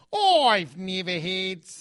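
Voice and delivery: clumsy, slow, bad put-on Australian accent. Trying out the one sentence done in a put-on accent: bad australian accent. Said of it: "I can't do an Australian accent".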